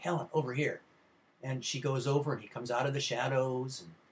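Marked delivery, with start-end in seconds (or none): 0.0-0.8 hushed stage whisper, calling out under the breath. Retelling a movie's last scene, a voice calling from darkness: imitating a half-whisper. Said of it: "He's whispering".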